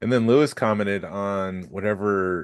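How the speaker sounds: usual speaking voice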